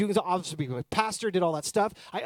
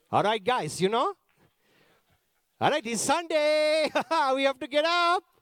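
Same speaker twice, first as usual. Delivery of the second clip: put-on Indian accent, pitched up; 6 semitones higher than usual. Retelling how Dad woke everyone up one Sunday, imitating Dad's accent. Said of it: "I'll do it in the accent".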